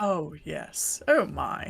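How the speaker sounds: put-on very deep, old-fashioned posh upper-class voice. Discussing a character's english voice actor, putting on a posh upper-class voice. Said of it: "The man does posh well".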